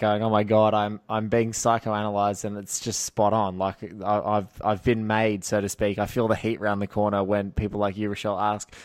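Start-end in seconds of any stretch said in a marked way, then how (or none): none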